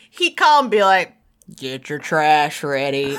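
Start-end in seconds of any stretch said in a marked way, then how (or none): 1.6-3.2 very low, deep, slow southern drawl. Retelling grandpa's summer phone calls, imitating grandpa's southern voice. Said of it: "in his real southern voice".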